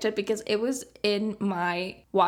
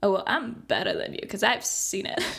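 mock smug superior know-it-all voice. A show host imitates the typical film student: mock-snobbish film student. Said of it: "is that attitude of like".

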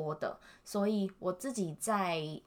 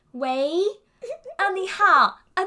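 full-energy, very loud, very high-pitched energetic delivery; 12 semitones higher, 13 dB louder than usual. Speaker acting out how they used to answer phone calls, imitating an energetic phone greeting. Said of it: "我都会很有精神，我都会讲".

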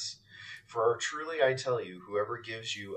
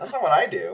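high, puzzled, disbelieving tone. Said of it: "cocking my head at one side and going".

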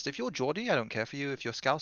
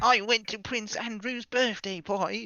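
fake southern English accent, pitched higher; 9 semitones higher, 4 dB louder than usual. Mocking a co-host's accent in a round of accents: put-on southern English accent. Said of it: "have we all done our accents?".

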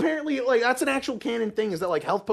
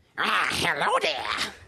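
put-on goblin voice. Voicing a goblin shopkeeper who greets the players: goblin voice. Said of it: "you see this goblin".

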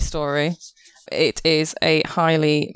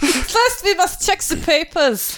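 bad, fake German accent, higher; 14 semitones higher than usual. Playing a gate guard checking papers with a bad german accent. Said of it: "I've done my two German accents very badly".

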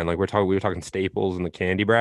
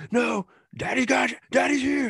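raspy put-on voice, higher. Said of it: "that same, like, raspy".

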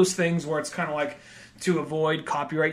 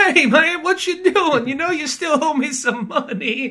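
very high, loud, laid-on Southern friendly charm; 11 semitones higher, 7 dB louder than usual. Acting out a scene where Bama confronts a man who owes him money: Bama's friendly Southern charm. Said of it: "the super friendly Southern boy kind of charm".

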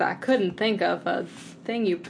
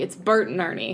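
ordinary delivery

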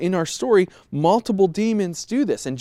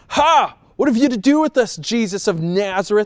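mock demon voice, sassy and taunting; 3 semitones higher, 4 dB louder than usual. Retelling the story of a possessed man, voicing the demon calling out jesus, mock-sassy. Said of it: "I can almost hear like the sass in his voice".

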